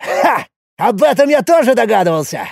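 high, gleeful, joyful exclaiming. Reacting to a companion's explanation, with a joyful exclamation. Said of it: "радостно воскликнул Якул".

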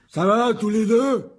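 big, very high, hoarse, booming yell. A narrator reads a boy calling out to the two others, shouting in a big hoarse voice. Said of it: "cria d'une grosse voix rauque".

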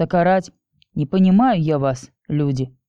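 ordinary delivery

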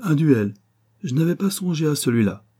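high, sudden exclamation. Octave reacts as an Englishman insults the count: exclaimed. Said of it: "s'écria Octave".

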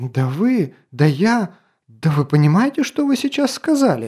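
outraged, indignant hiss, swooping and rising. Narrator reads a princess's outburst at the lord of the castle, indignant hiss. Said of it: "Возмущенно прошипела Мельсиль".

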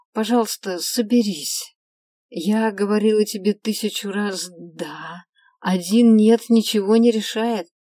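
tired, weary, sighing voice. Rubbing her temples, a woman speaks to a sobbing man: weary sigh. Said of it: "вздохнула я, устало потирая виски".

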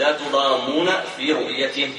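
ordinary talk

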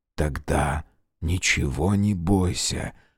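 close, intimate whisper. Narrator reads Rogozin speaking to Katerina, whispered in her ear. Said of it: "прошептал ей на ухо Рогозин".

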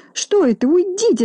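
squealing, very high-pitched shriek. The hostess pushes away the rat the detective hands her, shrieking. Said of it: "завизжала Минога".

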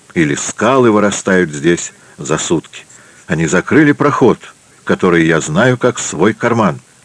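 ordinary delivery

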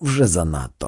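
plain

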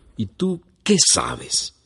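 slow, angry, furious, challenging retort. The mayor retorts to the old man who contradicted him: furious. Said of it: "estrujó con furia el pañuelo".

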